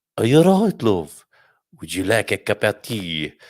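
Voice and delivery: Birmingham accent with French accent mixed in. Retelling offering Missus M tea after the kids have gone to bed, Brummie-French hybrid accent. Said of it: "is that the Brummie French hybrid?".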